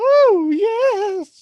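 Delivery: "yes" held long, very high and loud. Doing a quick impression after being asked about it: Paul Bearer impression. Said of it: "I don't think I did a Paul Bearer impression tonight".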